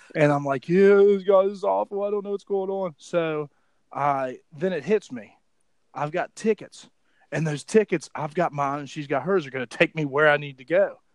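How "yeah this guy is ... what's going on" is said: imitated drunk speech, higher and louder. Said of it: "I'm shit-faced drunk".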